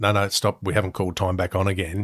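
ordinary delivery

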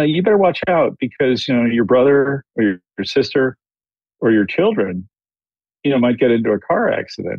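ordinary talk

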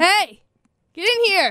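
voice lifted high and projected. A podcast host calls someone in to join the podcast, yelling. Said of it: "invite people on our podcast by yelling at them".

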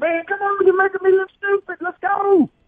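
high-pitched, loud, fast hollering. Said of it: "I'm hollering at Andy".

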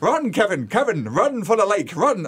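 fully in-character, put-on Irish accent. Retelling how the mother acted out a scene: imitating mother's irish accent. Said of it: "doing this Irish accent".

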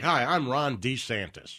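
very slow, drawn-out, deliberate word-by-word delivery. Retelling old clips of a politician introducing himself: imitating Ron DeSantis. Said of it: "he was like".

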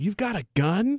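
really loud, high, drawn-out exclamation. Traveler retells a ticket agent reacting to the declared firearm: imitating a loud outburst. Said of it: "Like really, really loud".

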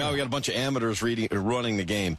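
plain

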